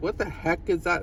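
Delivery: plain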